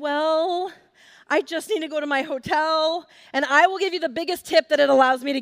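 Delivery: put-on best, nicest, polite fake-nice voice. Retelling how they asked a driver to take them to the hotel, putting on best voice. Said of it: "I put on my best voice".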